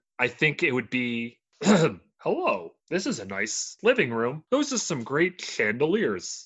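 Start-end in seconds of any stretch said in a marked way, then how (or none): 1.6-6.5 put-on, sing-song TV sitcom American accent. Showing what a typical American TV sitcom accent sounds like: typical American TV sitcom accent. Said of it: "just a typical American TV sitcom accent".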